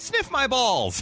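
put-on high, slow innocent kid voice. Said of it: "walked into the house and said".

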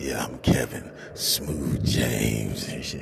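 fake, put-on bass voice, very low and deep. Acting out someone introducing themselves in a put-on deep voice. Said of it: "Deep voice like".

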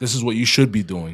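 plain

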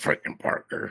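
breathy, whispered half-voice. Reading out a fishing result, imitating Danny. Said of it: "did I sound like Danny when I said that?".

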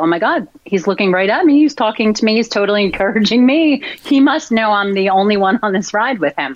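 ordinary talk

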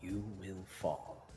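strange, unrecognizable, hushed voice, very quiet. Running a tabletop game, the speaker voices a line in an unfamiliar voice. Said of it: "in an unfamiliar voice".

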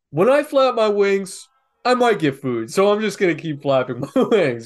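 put-on, high, loud pigeon character voice. Voicing pigeons that think flapping brings food: put-on pigeon voice. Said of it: "the voice you're giving them".

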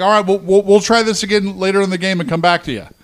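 fast, frustrated tone. Recounting how he cut her off twice, imitate his frustrated voice. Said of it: "You could tell the frustration in his voice".

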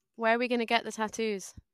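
ordinary talk

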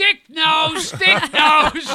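high, loud yelling of schoolkids. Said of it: "they'd all start yelling".

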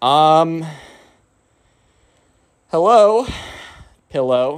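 uneasy, awkward, halting, hesitant delivery. Retelling how a friend greeted a body pillow: imitating someone speaking awkwardly. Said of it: "he's just so awkwardly like".

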